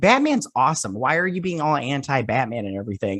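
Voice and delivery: normal talking voice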